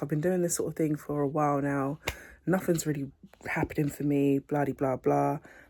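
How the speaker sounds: ordinary talk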